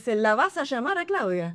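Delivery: gentle Argentine Spanish accent. Showing how the Argentine version of the phrase goes, in Argentine Spanish accent. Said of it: "¿El argentino?".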